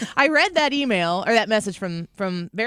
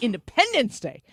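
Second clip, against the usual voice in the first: heavy, pointed stress on "-pendence" in "Independence". Retelling how a lady replied to her happy fourth of July, stressing 'Pendence Day'. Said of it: "And I emphasize the Pendence Day".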